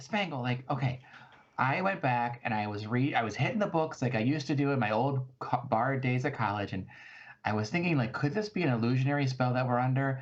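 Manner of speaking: normal talking voice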